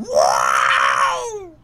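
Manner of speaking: low, loud, blurted robot yelp. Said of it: "you heard R two go".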